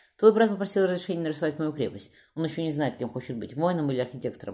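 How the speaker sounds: ordinary delivery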